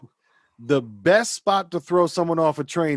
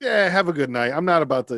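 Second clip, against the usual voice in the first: ordinary delivery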